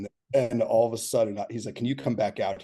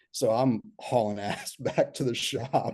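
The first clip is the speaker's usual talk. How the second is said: ordinary talk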